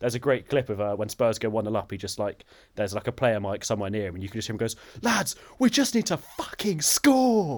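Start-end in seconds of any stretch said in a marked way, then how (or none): 5.0-7.6 put-on scream, very high-pitched and very slow. Retelling what a player yells on his mic when Spurs go one up, imitating him screaming. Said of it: "He's just screaming".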